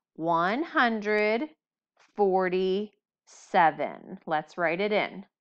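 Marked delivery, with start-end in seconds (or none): 0.2-4.2 very slow, stretched-out delivery. In a place-value lesson, the speaker says the number really slowly. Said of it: "Now let's say it really slow".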